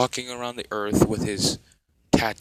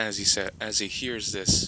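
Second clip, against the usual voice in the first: normal talking voice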